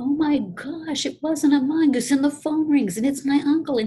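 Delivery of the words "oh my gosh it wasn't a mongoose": all worked-up, upset screaming outburst. Speaker acts out the listener upset about the mongoose: imitating someone screaming. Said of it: "you're all upset and you're screaming".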